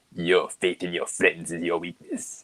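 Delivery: voice breaking, kept soft. Your voice gets crackier as it gets later; deliver the line to a friend, cracky Emperor voice. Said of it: "is it cracky enough to do a good".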